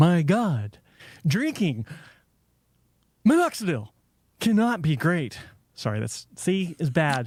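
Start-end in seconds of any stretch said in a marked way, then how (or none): 0.0-5.4 strong, swooping, sing-song pitch on every phrase. Asked for your thoughts on drinking topical minoxidil, answer with an unprepared William Shatner impression. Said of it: "Why don't you give me your thoughts as William Shatner? ... You saw the inflection was there".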